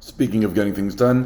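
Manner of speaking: ordinary delivery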